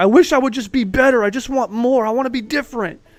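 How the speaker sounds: tearful, weepy, high crying voice. Acting out someone in the bathroom mirror wishing to be better: mock crying in the mirror. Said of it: "in the bathroom looking in the mirror crying".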